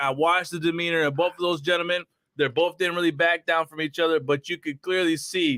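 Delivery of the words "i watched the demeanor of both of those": plain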